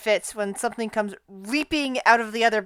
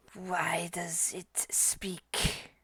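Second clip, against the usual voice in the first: slow, rough, gravelly, hushed, drawn-out creature whisper; 4 semitones lower, 14 dB quieter than usual. Narrating a story, voicing a hissing snake creature that suddenly speaks: gravelly creature voice. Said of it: "you hear a gravelly voice".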